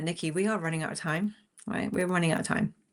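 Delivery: plain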